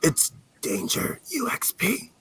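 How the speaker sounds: very slow, clumsy, breathy whisper. Confirming the correct quiz answer, trying to whisper. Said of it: "I'm shit at whispering".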